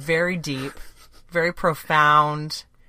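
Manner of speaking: loud, drawn-out sarcastic mock admiration. Commenting on the play's storyline with three dads: sarcastic. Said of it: "I'm being sarcastic".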